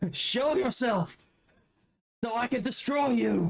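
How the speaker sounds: shrill, very high-pitched yell. Answering the game master in character: yelling a challenge.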